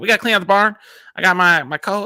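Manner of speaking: high little voice. Recalling an SNL sketch: Ross Perot impression. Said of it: "He would do that little voice".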